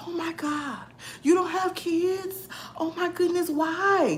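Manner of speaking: hurt, pitying tone, very high and drawn out. Retelling a coworker's reaction to hearing there were no kids: imitating a hurt, pitying coworker. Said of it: "She was so hurt".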